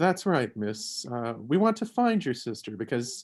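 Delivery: ordinary delivery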